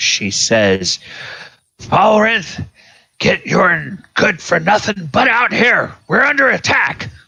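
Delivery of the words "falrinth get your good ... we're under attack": loud, shrill, very high-pitched shout. A woman under attack calls to falrinth across the hall, crying out loudly. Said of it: "cries out in a loud voice".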